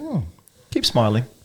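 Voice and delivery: ordinary talk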